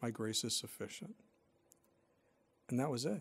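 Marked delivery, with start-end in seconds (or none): 0.0-1.2 hushed, soft whisper, utterly still. Retelling what the Lord said to the speaker during a raging storm, very still, soft voice. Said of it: "in a very still, soft voice".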